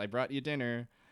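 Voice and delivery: ordinary talk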